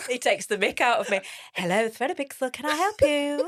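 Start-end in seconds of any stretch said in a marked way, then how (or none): 1.6-3.5 put-on polite, posh telephone voice, pitched up. Asked if he changes his voice for clients on the phone, answering in telephone voice. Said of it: "do you change your voice to a telephone voice?".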